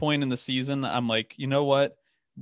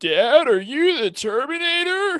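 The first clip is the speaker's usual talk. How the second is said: put-on dopey teen voice, higher pitch; 13 semitones higher, 4 dB louder than usual. Voicing a son asking his dad a question: Chris Griffin voice. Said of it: "That's Chris".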